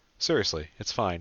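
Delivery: ordinary delivery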